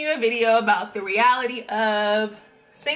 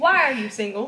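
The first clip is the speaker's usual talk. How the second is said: put-on mama-style voice. Asking Michael why he is single, mama voice. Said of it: "hear my mama voice".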